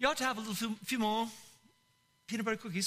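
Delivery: brief, affected, put-on English accent. Preacher praising the word ought gives an example in a put-on english accent. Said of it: "that's the English accent".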